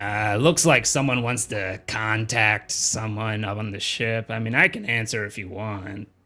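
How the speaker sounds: gruff, rough male voice. Voicing Lady offering to answer a call from the surface: gravelly male voice. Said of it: "Your voice sounds very much gravelier".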